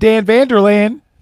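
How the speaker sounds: American Southern accent. Saying a man's name the way it's best said, southern accent. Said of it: "the best way to say his name is with a southern accent".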